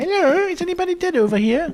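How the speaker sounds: very high, goofy, silly sketch-comedy voice. Searching for bodies as it gets dark, the speaker calls out in a Monty Python voice. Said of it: "My best Monty Python voice".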